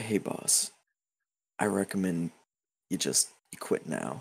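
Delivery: close, hushed whisper in the ear. Voicing a man who leans close with a warning: whispering in character. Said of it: "whispers in your ear".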